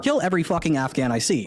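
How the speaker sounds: plain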